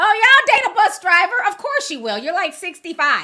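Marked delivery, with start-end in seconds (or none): 0.0-1.3 shrieking, high, loud put-on scream. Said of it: "Ayanna Van Zandt is screaming, like".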